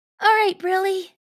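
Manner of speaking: breathless, very high-pitched call. Elsie, riding her reindeer brilli, speaks to it, breathless. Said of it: "she said breathlessly".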